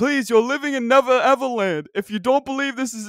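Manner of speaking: put-on voice, pushed very high-pitched. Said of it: "This is my impression of Dick Vitale".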